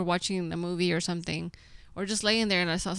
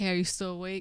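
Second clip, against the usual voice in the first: usual speaking voice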